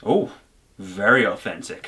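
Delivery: sarcastic, fake-impressed mock awe, almost condescending. Recording several takes of a reaction line, with sarcastic fake impressedness. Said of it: "this fake impressedness, very sarcastically".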